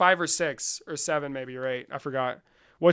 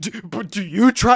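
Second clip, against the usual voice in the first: mock, loud, seething fury, stumbling start; 4 semitones higher, 7 dB louder than usual. Imitating a debater who stays calm on the surface: imitating someone seething. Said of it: "you can tell he's seething".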